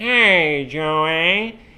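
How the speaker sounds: "hey" dragged out long. Retelling how high school classmates greeted him, in a Squidward voice. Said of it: "because he sounds like Squidward".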